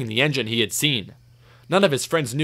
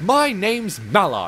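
proud, pleased tone; 4 semitones higher than usual. Narrator reads the engine Mallard telling James her name, proud. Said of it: "she replied proudly".

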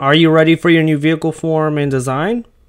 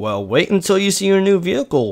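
soft, playfully teasing tone; 3 semitones higher, 5 dB quieter than usual. Speaker teases a reluctant partner before revealing a new vehicle, teasing. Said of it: "Why did you say it like that?".

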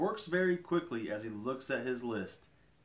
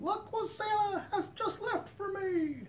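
put-on very high small child's voice, slow and drawn out. Reading a Santa story aloud, voicing the awakened children in a little kid voice. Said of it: "That was my little kid voice".

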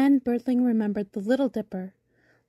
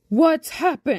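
big booming, rolling voice; 3 semitones higher, 4 dB louder than usual. Reading a story where a bumblebee comes to see what happened, booming bass voice. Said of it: "he boomed in his rolling bass voice".

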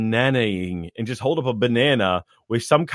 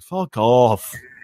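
very annoyed put-on British accent; 4 dB louder than usual. Voice actor shows an interviewer a voice: a very annoyed british person. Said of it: "a very annoyed British person".

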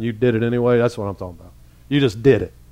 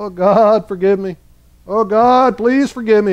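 mock crying, tearful, pleading; 9 semitones higher than usual. Retelling own past prayers asking forgiveness: imitating own past crying. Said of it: "I'd cry".

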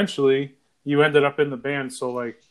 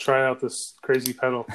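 normal talking voice

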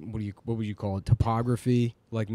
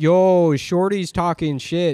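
put-on Toronto accent, higher and louder; 7 semitones higher, 8 dB louder than usual. Quoting a woman in a video, imitating Toronto slang accent. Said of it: "so you call it a Toronto accent".

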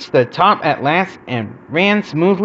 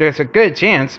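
ordinary delivery

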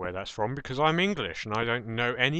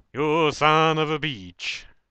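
loud, raised, blurted put-on exclamation; 6 semitones higher, 8 dB louder than usual. Gamer taking damage from a short fall, exclaiming: Jesse Cox impression. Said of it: "It's my Jesse Cox impression".

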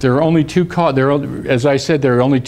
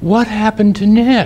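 mock caring, worried, plaintive, gentle voice, pitched up; 7 semitones higher than usual. Retelling his sister's question on seeing him limp, imitating a plaintive caring voice. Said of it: "such a plaintive, caring voice".

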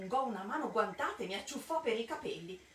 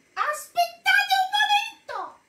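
shrill, very loud, high-pitched shouting cry; 15 dB louder than usual. Reading Mildred's cry in the story, shouted. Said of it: "Gridò Mildred".

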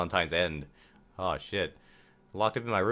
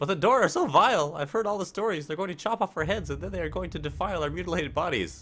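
very high, scared, frightened outburst; 10 semitones higher than usual. A character replies to a sibling telling her to stop crying, frightened. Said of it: "I'm so frightened".

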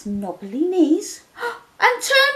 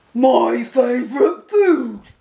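very low-pitched monster voice, dropped way down; 10 semitones lower than usual. Reading the story aloud, the Gruffalo speaks to the mouse: Gruffalo voice.

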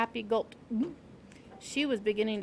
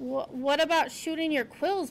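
ordinary delivery

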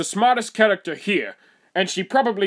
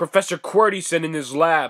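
ordinary delivery

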